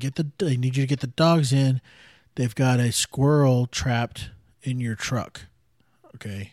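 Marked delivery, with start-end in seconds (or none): none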